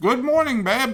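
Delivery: very high voice, talking while chewing with mouth full. Answering a morning greeting while eating, talking with mouth full. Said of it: "I have a mouthful of food".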